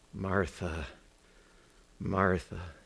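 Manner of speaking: put-on gentle voice. Speaker acting out a gentle reply to a resentful woman, retelling a gentle address. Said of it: "He says it so gently".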